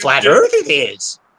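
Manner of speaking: slow, drawn-out drawling voice. Reading out advice from Synaptic in a Yoda voice. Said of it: "advises with the Yoda voice".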